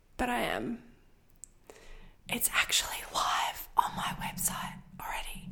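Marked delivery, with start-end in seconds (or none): 2.3-5.5 soft, breathy, secretive whisper. Telling listeners a little secret about a sneak peek: whispering. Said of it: "I don't know why I started whispering".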